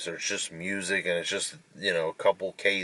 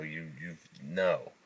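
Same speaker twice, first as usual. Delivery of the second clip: plain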